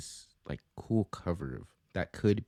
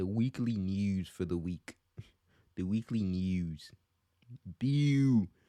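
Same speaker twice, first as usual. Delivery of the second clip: Baltimore-accented speech. The speaker tries out talking like a Baltimore person: Baltimore accent. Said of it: "like a Baltimore person?".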